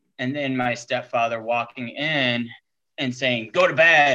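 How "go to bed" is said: put-on really loud voice, higher and louder. Retelling how the stepfather ordered him to bed: imitating a really loud voice. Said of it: "in a really loud voice".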